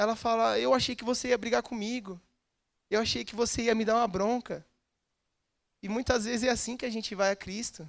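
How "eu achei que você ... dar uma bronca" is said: put-on crying through tears, like a child. Retelling a video where a child spills the treat: imitating a crying child. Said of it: "E a criança chorando, realmente sentida".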